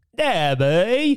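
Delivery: London Cockney accent. Answering a request to say a name in Cockney: Cockney accent. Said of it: "how do you say Debbie in Cockney?".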